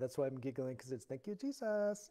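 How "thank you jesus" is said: put-on gentle, sweet, pitched-up Filipino accent. Recalling Filipino friends thanking Jesus while visiting house to house, sweet Filipino accent. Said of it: "with I'll say sweet accent".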